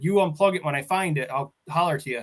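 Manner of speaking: ordinary talk, nothing marked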